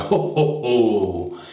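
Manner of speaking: big "ho, ho, ho", each "ho" stretched out. Rinsing off with cold water after a shave: Father Christmas ho ho ho. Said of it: "Sound like Father Christmas there".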